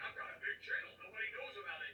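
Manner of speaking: boastful online-video voice, pitch swinging all over. Mocking a YouTuber's claim of having a big channel: impression of Simon Feck. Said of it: "he's doing an impression of Simon Feck".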